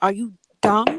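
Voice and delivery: sassy voice dripping with attitude. Showing someone who is using the phrase wrong how to say it, with attitude. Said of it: "you have to say it with attitude".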